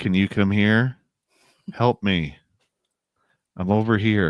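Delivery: mock monotone voice. Retelling voices heard in the forest calling for help: imitating a monotone voice. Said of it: "very monotone voices".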